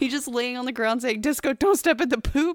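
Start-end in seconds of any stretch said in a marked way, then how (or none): 1.2-2.6 play-acted, loud, really upset, distressed calling out. Telling how Sean lay on the ground talking to the dog, imitating Sean really upset. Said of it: "and like really upset".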